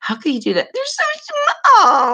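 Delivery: whiny, very high, swooping sing-song voice. Imitating a woman talking about the kids, in an imitated whiny voice. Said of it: "that whiny voice".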